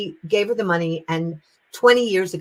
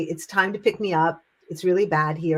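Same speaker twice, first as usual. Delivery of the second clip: ordinary delivery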